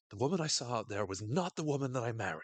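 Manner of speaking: acted-out, heated, very angry, accusing, reproachful tone. Retelling a character confronting her spouse: imitating an angry accusation. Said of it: "she's getting really angry with her".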